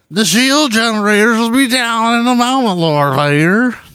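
very high-pitched baseball announcer voice, ballpark style. Joking about a Star Wars officer's name: Will Ferrell's Harry Caray impression. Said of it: "You're doing an impression of Will Ferrell".

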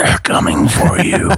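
high whisper, close at the ear. Retelling sneaking up on a jumpy woman in a house, the speaker: retelling a whisper. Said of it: "I just leaned up and I whispered into her ear".

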